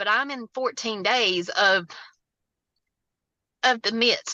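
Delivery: fighting back tears. Describing fourteen days in the midst of devastation, holding back tears. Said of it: "I'm trying not to cry".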